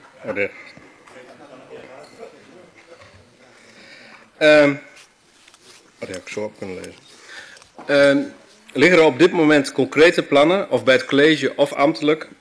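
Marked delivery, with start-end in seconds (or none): 0.3-8.4 slow, flustered and nervous. Given the floor to ask questions, the speaker is getting all nervous. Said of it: "ik word helemaal zenuwachtig".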